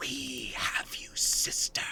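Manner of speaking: hushed, close-up whisper. A game master voices a presence speaking to a player's character; whispering into your ear. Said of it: "whispering into your ear".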